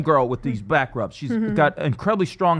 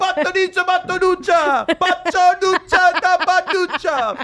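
fake Italian accent, much higher; 5 dB louder than usual. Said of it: "Fake Italian".

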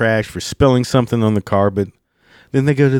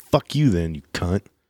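muttering under breath, lower; 4 semitones lower, 5 dB quieter than usual. Retelling what you said after a woman with her kid walked on, muttered under breath. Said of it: "under my breath".

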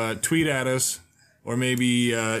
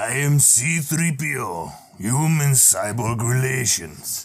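very slow, drawn-out put-on Russian accent; 3 dB louder than usual. Saying the game's sentence in a drawn accent: Russian accent. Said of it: "we're going to begin with Russian".

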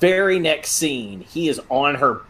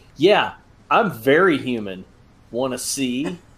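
plain

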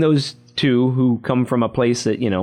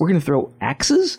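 play-acted, high, disbelieving, incredulous tone; 5 semitones higher than usual. Quoting two game developers hearing the axe-throwing plan: retelling an incredulous question. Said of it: "And when they're like".

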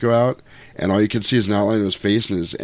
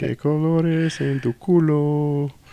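put-on Mexican English accent, higher pitch; 6 semitones higher than usual. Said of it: "Now I sound like, uh, [name] and [name]".

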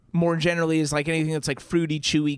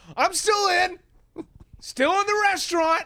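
put-on shout, voice pitched way up high. Recounting a man holding a drink just inside a restaurant, imitating someone shouting. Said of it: "and he's shouting".

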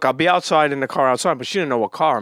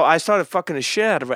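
normal talking voice

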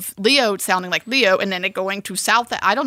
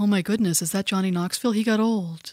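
mock dry, flat deadpan with no inflection; 4 dB quieter than usual. Retelling a friend's comment on a trailer, imitating Candace's deadpan. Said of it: "my deadpan friend Candace".

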